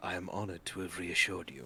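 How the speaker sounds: overly courteous, mock-polite, dripping sarcasm. Still angry, he gives a very sarcastic bow and replies, sarcastic and mock-polite. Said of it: "does like a very sarcastic bow and goes".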